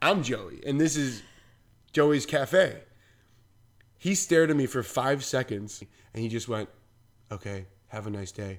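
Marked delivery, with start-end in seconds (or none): 7.3-8.6 deep, very hushed, soft put-on voice. Retelling what a man said to Joey at Joey's Cafe, in a Trump voice. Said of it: "In that Trump voice?".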